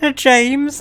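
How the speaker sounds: very high-pitched, botched Irish accent. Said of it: "that was the worst Irish voice ever".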